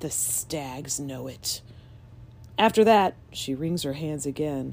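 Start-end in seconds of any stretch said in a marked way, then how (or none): 0.0-1.6 dreadful, very quiet, low, drawn-out hush. Narrator reads a woman speaking before the cavalier's portrait: low, terrible voice. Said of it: "in a low, terrible voice".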